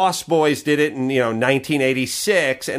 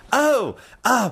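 high, put-on fake British accent. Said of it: "speaks with a fake accent".

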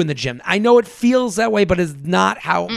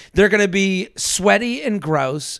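plain

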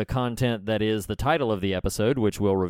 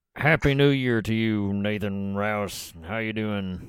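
talking without opening the teeth. Greeting a buddy who is back for the new year, talking without opening teeth. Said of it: "when I don't open my teeth".

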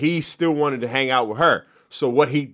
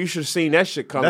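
ordinary talk

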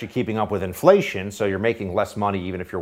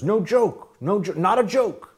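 high-pitched, mocking impression of an old politician's voice. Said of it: "He also says".

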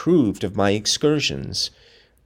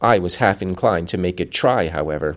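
plain

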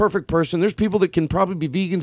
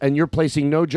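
ordinary talk, nothing marked

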